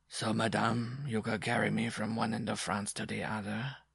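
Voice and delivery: level, monotonous drone, half under the breath. Narrating a man's reply to madame, droned in a monotonous undertone. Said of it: "he droned in a monotonous undertone".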